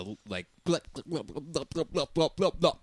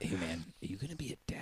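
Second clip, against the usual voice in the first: mock secretive tone, quieter; 3 semitones lower, 9 dB quieter than usual. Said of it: "Bud was all real secret".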